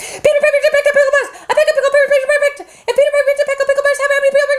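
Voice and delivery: rapid-fire, rattled off at full speed. The listeners chose fast, so the speaker attempts a tongue twister fast. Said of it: "Let's go fast".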